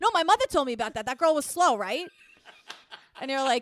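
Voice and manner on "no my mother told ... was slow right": slipping into a Boston accent. Imitating the kids again after being asked for more: boston accent. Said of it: "give us more, give us more".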